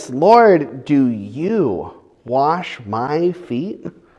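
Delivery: incredulous tone, lingering on you. Retelling Peter's protest as Jesus comes to wash his feet, retelling an incredulous question. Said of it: "in this incredulous tone of voice".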